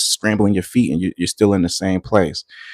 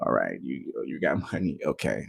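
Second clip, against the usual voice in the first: very soft, hushed, laughing, amused voice; 6 semitones lower, 14 dB quieter than usual. Retelling the wife's reply to bragging about money: imitating someone laughing. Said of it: "she was laughing at me like".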